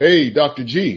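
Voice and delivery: big, loud, carrying booming call. Retelling an inmate calling out from behind, in a loud booming voice. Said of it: "I heard this loud, booming voice behind me".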